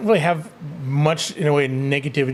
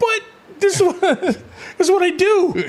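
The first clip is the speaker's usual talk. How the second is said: put-on high-pitched little kid voice. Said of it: "like a little kid".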